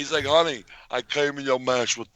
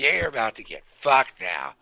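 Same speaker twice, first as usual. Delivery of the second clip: put-on menacing inmate voice. Imitating a friend threatening an inmate: imitating Tommy threatening an inmate. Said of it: "says that to them and he goes".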